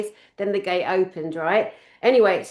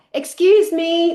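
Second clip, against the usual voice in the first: put-on loud, high-pitched yell; 8 semitones higher, 6 dB louder than usual. Retelling calling someone over at self-checkout: imitating own yell. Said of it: "So I yelled".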